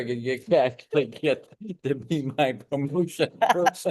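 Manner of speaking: slow, laughing through the words. Thanking a guest and joking about them, laughing while talking. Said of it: "I'm laughing".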